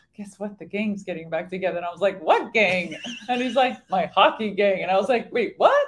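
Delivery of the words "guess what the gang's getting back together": put-on bashful, awkward, hushed and quick. Speaker retells what a hockey player said to the speaker: imitating a sheepish tone. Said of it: "he like very sheepishly says to me".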